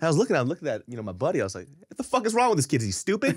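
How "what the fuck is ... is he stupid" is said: put-on super loud, very high-pitched shout. Retelling what he said to his buddy about the boyfriend: retelling a loud outburst. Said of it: "just super loud".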